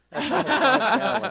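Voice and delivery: high squeal delivered through a laugh.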